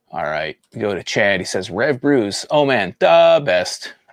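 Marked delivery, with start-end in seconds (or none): 1.7-3.9 put-on Chicago accent, spoken very slowly. Reading out someone's beer recommendation aloud, in his best chicago accent. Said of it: "In his best Chicago accent".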